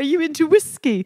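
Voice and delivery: put-on upper-crust, posh British English accent. Retelling an overheard conversation, a man asks a woman a question: posh British accent. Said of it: "can I do an accent? ... posh and British".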